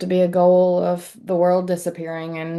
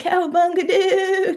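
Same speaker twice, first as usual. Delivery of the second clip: very high-pitched, full surfer dude voice; 12 semitones higher than usual. Repeating someone's earlier impression of a Ninja Turtle: Michelangelo impression. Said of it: "your impression of the most enlightened Ninja Turtle".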